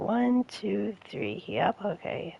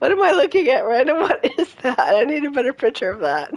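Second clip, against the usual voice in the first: loud, high-pitched talking through laughter; 5 semitones higher, 12 dB louder than usual. Looking at a picture someone sent, laughing while talking. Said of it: "I'm trying not to laugh too hard".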